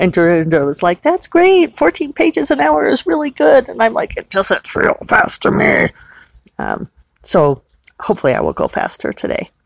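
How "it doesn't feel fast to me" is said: exact put-on demon voice, laid on. Quoting their own reply to Dorinda, the speaker uses a demon voice. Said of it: "I said it in that exact demon voice".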